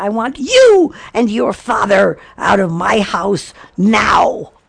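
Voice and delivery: slow, deliberate, furious tone. Retelling ordering someone out of the house: retelling own furious demand. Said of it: "And I am furious".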